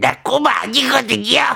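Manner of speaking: put-on high voice with a rasp. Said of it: "자 살짝 보여드릴까요?".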